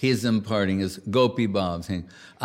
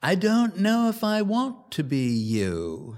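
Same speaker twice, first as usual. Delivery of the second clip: put-on strong British accent, drawn-out you, sing-song; 8 semitones higher than usual. Quoting what a man said in his talk, in a heavy british accent. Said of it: "he said with this heavy British accent".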